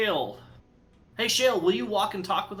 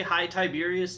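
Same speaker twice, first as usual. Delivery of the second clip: normal talking voice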